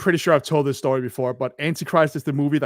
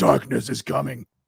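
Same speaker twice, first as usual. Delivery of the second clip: cheap, processed, rough, creaky demon voice. Recounting a film scene where a fox looks up at him: cheap Audacity demon voice. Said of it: "in Audacity as demon voice".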